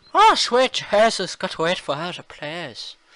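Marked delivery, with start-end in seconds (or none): 0.2-1.4 put-on thick Irish accent, louder, higher, slower. Retelling a voice from the back, in a thick irish accent. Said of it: "But in like a really thick Irish accent".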